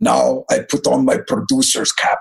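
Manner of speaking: put-on thick, heavy Turkish accent in a low voice. Quoting what the producer would always say, heavy Turkish accent. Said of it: "he had this heavy Turkish accent".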